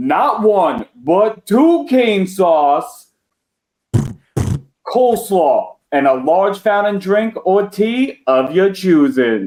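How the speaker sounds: very slow, deliberate, spelled-out delivery. Reading out the combo slowly for the dullards of Valverde: nice and slow. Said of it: "I'll take it nice and slow".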